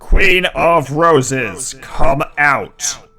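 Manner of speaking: thunderous, ringing, echoing, very loud, high call. The narrator voices a hovering figure calling out across the land, booming, echoing voice. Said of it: "It says in a booming voice that echoes across the land".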